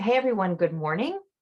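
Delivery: uptalk, pitch rising on morning. Illustrating a meeting opener said as a question: rising question inflection on morning. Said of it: "you accidentally using the question inflection?".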